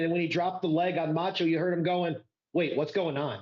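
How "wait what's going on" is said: put-on confused announcer voice. Retelling the announcer's call of the leg drop on Macho, mock-confused Tony Schiavone voice. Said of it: "Like he was confused".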